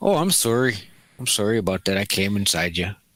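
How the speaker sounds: put-on Canadian accent, done as a bit. Joking about a wrestler who had a kid with a lady: Canadian voice. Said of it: "I love doing Canadian voice".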